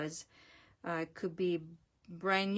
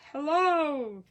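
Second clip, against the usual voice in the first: sudden, high-pitched, loud yelling outburst; 8 semitones higher, 7 dB louder than usual. Voicing a stamped figure on a card: yelling in a card character's voice. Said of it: "This one is yelling".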